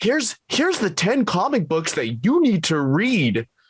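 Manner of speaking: silly list-video voice. Mocking list-style videos in conversation, WatchMojo list voice. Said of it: "It's a stupid list voice".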